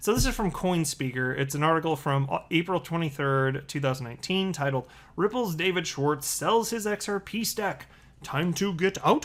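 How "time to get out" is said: rising inflection on out. Reading an article headline that ends in a question, rising pitch on 'out'. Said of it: "Which is why the inflection in my voice goes up".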